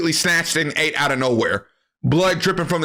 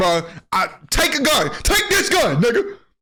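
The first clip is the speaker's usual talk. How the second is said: straight-up yelling, high and hollered; 7 semitones higher than usual. Retelling an old man handing over a gun: imitating someone yelling. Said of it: "Don't yell at me".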